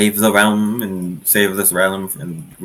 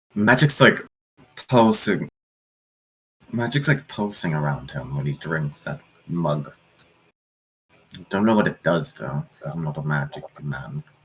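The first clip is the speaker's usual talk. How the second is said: hushed, in-character half-whisper; 4 semitones lower, 4 dB quieter than usual. Voicing a character half-whispering to the party about an innkeeper's magic: half-whispering in character. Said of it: "She kinda whispers to the party".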